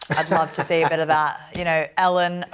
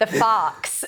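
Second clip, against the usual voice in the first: terrible, fake American accent; 4 semitones higher than usual. Giving an answer during a game, in a terrible American accent. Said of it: "that was my terrible American accent".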